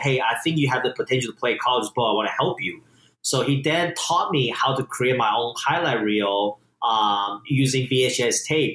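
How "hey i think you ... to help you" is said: ordinary delivery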